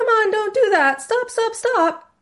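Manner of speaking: very high, squeaky, pleading head voice. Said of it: "But if it's really high-pitched".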